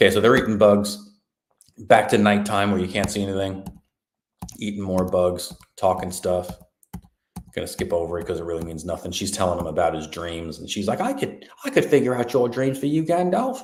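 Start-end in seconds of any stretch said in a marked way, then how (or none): 11.0-13.6 put-on British English accent, pitched up. Retelling a scene, mimicking a female character speaking to another character, using a put-on British accent. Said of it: "I'm just gonna do British for her".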